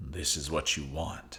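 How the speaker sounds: deep baritone, very hushed and low. Reading a game scene aloud, voicing an unseen speaker: baritone voice. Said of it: "followed by a baritone voice".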